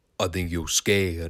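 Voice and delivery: deep, gravelly, low voice. Retelling how Rodney answered Kyle's callout before the match: deep gravelly voice. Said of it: "said in a deep, gravelly voice".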